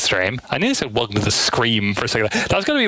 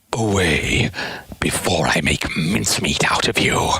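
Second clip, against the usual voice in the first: low, deep cartoon villain voice; 6 semitones lower than usual. A fan tries out lines from Sonic Adventure in an Eggman voice. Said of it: "Eggman's S A two voice actor".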